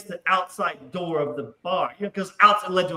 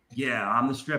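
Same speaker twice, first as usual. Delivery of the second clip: mocking, laced with sarcasm; 6 semitones lower, 5 dB quieter than usual. Retelling own answer to the girls asking if he's the stripper: retelling a sarcastic reply. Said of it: "It's sarcasm".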